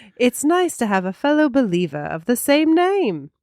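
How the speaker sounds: very posh, laid-on-thick accent. Host reading a listener's review aloud, going very posh with the accent. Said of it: "now I'm going very posh with my accent".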